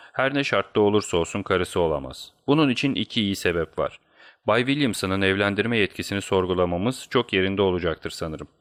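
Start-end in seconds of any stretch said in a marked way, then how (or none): none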